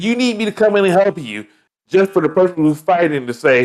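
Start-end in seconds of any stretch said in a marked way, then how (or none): 0.0-1.5 calling out, voice hardly raised. Acting out a bystander in a fight scene offering help: imitating someone screaming out. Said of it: "One person's gonna scream out".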